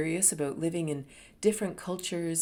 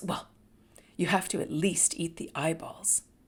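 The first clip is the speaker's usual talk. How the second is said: put-on annoyed tone. Retelling what a woman told her about the brains: imitating someone annoyed. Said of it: "annoyed with me".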